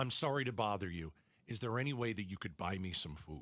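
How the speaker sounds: play-acted, extremely polite, as courteous as possible. Retelling what a woman at your car window asked, imitating a most polite voice. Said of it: "in the most polite voice that you could ever imagine".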